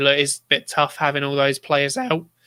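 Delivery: voice cracking. Discussing having many players out, the speaker talks with voice cracking. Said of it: "voice crack there".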